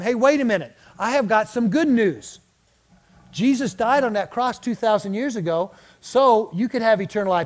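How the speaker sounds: ordinary talk, nothing marked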